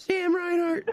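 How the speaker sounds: excited high yelling.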